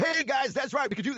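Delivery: over-the-top, very high, crazy morning radio voice. Explaining this is their normal voice, demonstrating a crazy morning radio voice. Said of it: "crazy morning radio voice".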